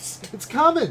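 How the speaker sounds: put-on high, loud, frightened little girl's pleading voice.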